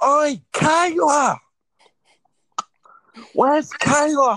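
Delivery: very high, loud, shrill, drawn-out puppet voice. Retelling a video of Billie Kay and Peyton Royce hand puppets: Billie Kay and Peyton Royce puppet voices. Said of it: "my two hand puppets, Billy Kay and Peyton Royce, going".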